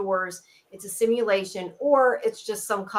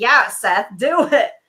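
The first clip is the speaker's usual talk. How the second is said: heavy mocking sarcasm, drawn-out and raised in pitch; 3 semitones higher, 8 dB louder than usual. Recapping a scene and quoting a character's reply, imitating a sarcastic reply. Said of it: "he's just like really sarcastic".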